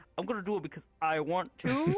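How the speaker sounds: plain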